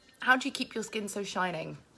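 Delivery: ordinary talk, nothing marked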